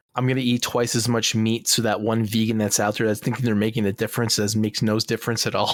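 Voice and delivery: ordinary talk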